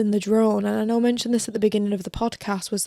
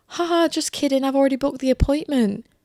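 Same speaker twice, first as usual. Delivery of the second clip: fast speech with a wicked, evil cackle throughout; 4 semitones higher than usual. Retelling what a woman said, imitating her evil laughing speech. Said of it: "laughing and saying".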